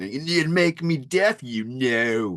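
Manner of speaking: snotty put-on British accent. Describing the snottiness in Rob's delivery, imitating Rob's snotty British accent. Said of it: "he's really throwing on that British accent".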